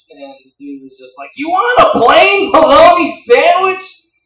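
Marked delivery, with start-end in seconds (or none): 1.3-3.8 very loud, very high, slow holler. Retelling what a loud deli guy said back: imitating someone yelling. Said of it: "why are you yelling?".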